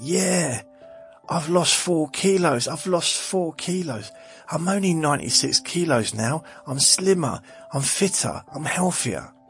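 very high, thrilled, excited yelling. Telling a listener what they shouted from the bathroom, retelling own shouting. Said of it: "and I was shouting out".

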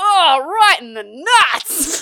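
very loud, very drawn-out, high yell. Retelling what a brother shouted in the cinema: imitating a shout at the top of lungs. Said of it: "shouts at the top of his lungs".

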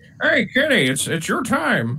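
very high, swooping, slow, drawn-out sing-song call. Doing an impression for the other speaker: Kenny Albert impression. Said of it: "That was more of a Kenny impression".

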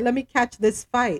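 ordinary delivery

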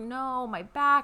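mock, pained, wailing scream of agony. Retelling a young woman's answer about her pain, acting out screaming in pain. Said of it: "She's like screaming about her back".

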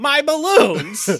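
put-on shrill, very loud, very high tantrum like a five-year-old. Quoting a movie villain's line: imitating a five-year-old tantrum. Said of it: "the best five-year-old temper tantrum".

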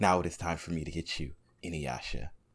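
soft, low, distant, aloof voice. Imitating Sesshomaru, described as aloof and cold-blooded: soft Sesshomaru voice. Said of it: "he had that soft voice, like".

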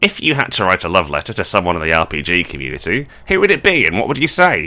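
loud, booming, swooping put-on mysterious stranger voice. Asking a question as the mysterious stranger: different voice for the mysterious stranger. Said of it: "Thank you for doing a different voice for that".

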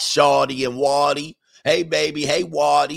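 put-on loud, drawn-out New Orleans accent. Describing how people talk near a New Orleans high school, New Orleans accent. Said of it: "they be talking like that".

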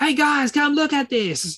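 put-on very high, squealing small-child voice. Recalling a child actor's annoying voice in a movie, doing a squealing Trevor Morgan impression. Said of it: "He just squeals".

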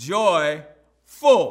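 emphatic stress, "joyful" stretched long and said loud.

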